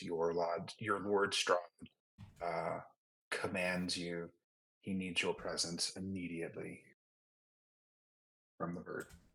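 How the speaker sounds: low, growling voice. A tabletop player sending a message through a bird, low growly voice. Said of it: "a low growly voice".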